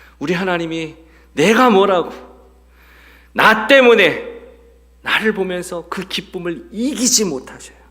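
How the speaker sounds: high-pitched, loud, fervent exclamation.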